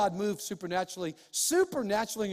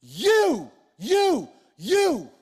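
high, very loud, swooping attention-grabbing shout; 6 semitones higher, 9 dB louder than usual. Retelling a Bible story to listeners: retelling Paul's shout. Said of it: "He shouted".

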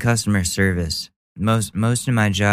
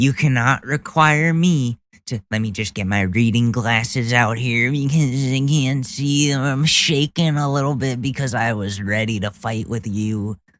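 mocking lady voice, fussy pace; 3 semitones higher than usual. Reacting to a clip, voicing the maskless woman reading her printout: mocking imitation of the lady. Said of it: "and she brings out the folded up printout".

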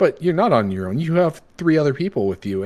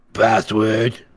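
put-on croaking creature voice, louder; 3 dB louder than usual. A game narrator voices a creature at a door slot asking for the password, croaking. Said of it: "as it croaks out towards you".

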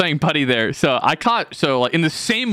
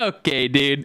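teasing, derisive, mocking parroted voice. Retelling how Fielding was teased: mocking Fielding's voice. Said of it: "mocking his voice".

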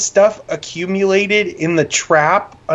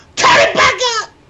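piercing, shrill, very high-pitched screech; 4 dB louder than usual. Retelling the cashier's reaction after the speaker turned the music down, retelling a scream. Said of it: "she's screaming".

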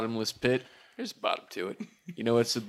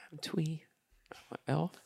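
tiny, barely audible, soft, high voice; 5 semitones higher, 10 dB quieter than usual. An elf bard introducing himself to the group, speaking too quietly. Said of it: "No one can hear you".

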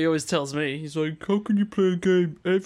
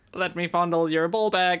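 put-on robot voice. Pretending to be a robot playing a recorded voice: voicing a sex robot. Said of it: "I recorded my voice saying".

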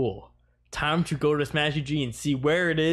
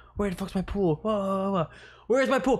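put-on drunk, lost-sounding calling voice, pitched up; 5 semitones higher than usual. Retelling being drunk and looking for the pool, retelling drunken yelling. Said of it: "I'm just yelling".

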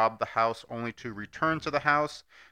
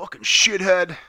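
put-on insulting fighter voice, higher and louder; 8 semitones higher, 9 dB louder than usual. Picturing Sean Strickland calling someone a shithead: Sean Strickland impression. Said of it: "I just picture Sean Strickland".

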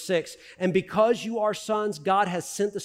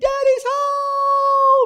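put-on excited kids screaming, shrill, high and loud; 10 dB louder than usual. Retelling coming home at the end of the day: imitating kids screaming. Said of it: "the kids are screaming".

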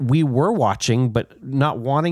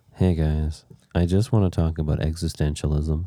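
very low, dejected, mopey, depressed sad-sack voice; 8 semitones lower than usual. Replaying how they tried to sound intellectual, in a mock-depressed Eeyore voice. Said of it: "Like Eeyore".

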